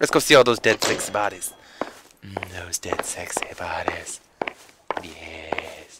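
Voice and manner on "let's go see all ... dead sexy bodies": creepy voice, lower and much quieter. Heading to the morgue while playing, in a creepy voice. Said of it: "I sound really creepy right now".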